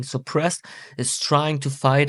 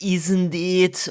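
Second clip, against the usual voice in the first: high, drawn-out Scottish lilt, long vowels on isn't it; 5 semitones higher than usual. Explaining how a Scottish woman speaks: imitating Scottish intonation. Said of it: "all the time it's like".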